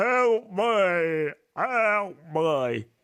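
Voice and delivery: put-on zombie voice, playing a zombie. Asked to be the zombie during a story reading, a co-reader does a zombie voice. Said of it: "can you be the zombie for this bit".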